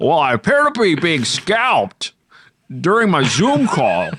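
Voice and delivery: very high, swooping, swinging put-on voice. Riffing on a comedy bit about a Zoom call: Jimmy Stewart impression. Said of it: "a Jimmy Stewart impression".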